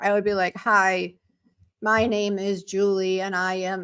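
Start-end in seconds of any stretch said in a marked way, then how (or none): 0.6-3.2 put-on robotic delivery, much slower. Recalling her early pre-recorded videos, imitating being robotic. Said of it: "So I was very robotic".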